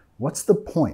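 intonation falls at the end on point. English intonation lesson for Spanish speakers: falling pitch on 'point'. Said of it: "Nota acá que estamos bajando de entonación al final".

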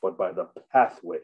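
pathway leaned on hard with long fall. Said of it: "emphasis on pathway".

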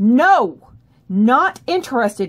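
loud, forceful, very firm, no-nonsense tone. Showing the firmest level of refusal when feeling threatened, loud and very firm. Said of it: "I didn't just get firmer with my voice. I got louder too".

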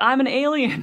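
shouted outburst. Retelling answering people who asked why, imitating own past scream. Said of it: "I would just be screaming this out".

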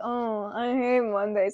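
low, flat, very slow monotone. Showing how Garfield should sound, monotone Garfield voice. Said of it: "at least try the monotone voice".

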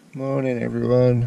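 loud, croaking, just-woken-up voice. Greeting everyone in the morning after a bad night, in a croaky voice. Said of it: "Croaky voice".

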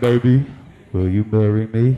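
voice dropped low, slow. Retelling a proposal on one knee, voice dropped low and deep. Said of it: "you know how we drop our voice when we're trying to impress our lady".

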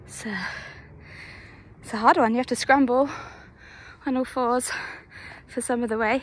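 out of breath, breathing hard. Climbing a hill and describing the route, out of breath. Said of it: "I'm really out of breath already".

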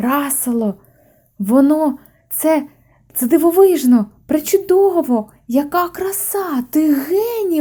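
high-pitched, cried-out exclamation. A round little man exclaims over the old car the lamb rebuilt. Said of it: "вигукнув Санта".

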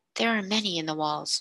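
plain

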